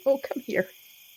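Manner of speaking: tearful voice on the verge of tears. Playing a character calling a bird over: teary-eyed. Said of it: "still very teary-eyed".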